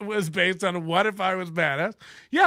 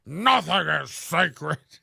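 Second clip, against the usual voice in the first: rough, put-on tough-guy voice; 2 semitones lower than usual. Mocking how guys who think they're tough talk, put-on tough-guy voice. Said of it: "This is what pe- guys who think they're tough sound like when they talk tough".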